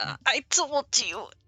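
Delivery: groaning in pain. Voicing a guard knocked down on the ground: groaning in pain. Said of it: "He groans in pain and he's like".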